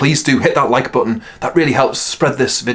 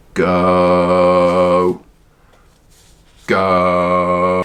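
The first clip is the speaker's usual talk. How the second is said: deliberately slowed, low, drawn-out speaking voice; 6 semitones lower than usual. Speaker demonstrating different voices to use, in a slow voice. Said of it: "your slow voice".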